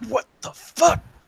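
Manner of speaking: very high, muttered outburst to self. Describing how a character in the game reacts; saying it out loud to himself. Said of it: "he'd definitely say it out loud to himself".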